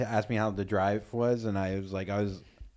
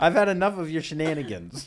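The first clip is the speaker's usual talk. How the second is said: mock stern scolding, high-pitched; 6 semitones higher, 4 dB louder than usual. Acting out a comic's joke about scolding: mock stern scolding. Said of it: "I've given it a stern talking to".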